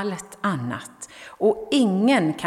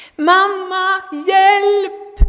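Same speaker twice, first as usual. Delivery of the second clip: very high, desperate, despairing scream, hjälp drawn out; 12 semitones higher, 8 dB louder than usual. Narrator reads someone pulled under by waves calling for his mother: despairing scream. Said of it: "Skrek han förtvivlat".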